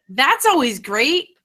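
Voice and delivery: heavy, dripping, super sarcastic tone. Answering how the week went after starting a new job: super sarcastic. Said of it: "She says with, like, super sarcasm".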